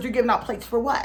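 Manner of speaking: usual speaking voice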